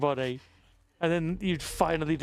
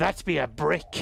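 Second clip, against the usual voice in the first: put-on slow, rough, growling pirate voice. Replying to someone's comment about one brick, in a pirate voice. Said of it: "I said that in a pirate voice".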